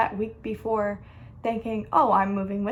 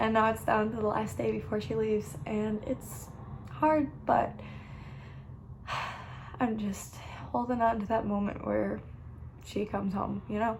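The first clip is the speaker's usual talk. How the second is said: crying, tearful, voice breaking; 4 dB quieter than usual. Telling her relationship story on video, she starts crying. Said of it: "Now I'm crying".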